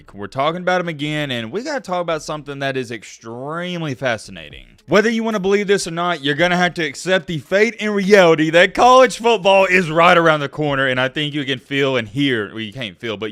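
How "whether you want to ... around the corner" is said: loud, high, excited hype voice. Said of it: "you can hear the excitement in my voice".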